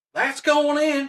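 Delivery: put-on Georgia accent, pitched very high. Retelling what a golfer from georgia said: imitating a georgia accent. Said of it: "in that Georgian accent".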